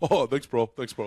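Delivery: mock earnest, sincere-sounding tone. Retelling how the comedian answered without irony: imitating earnest thanks. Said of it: "in just full on hon-, earnestness just goes".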